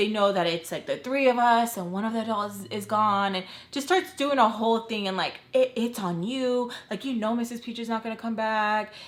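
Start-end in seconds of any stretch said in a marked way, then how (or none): 5.5-8.9 put-on crying, tearful voice. Retelling her crying and begging not to be left: imitating someone crying. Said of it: "She starts crying".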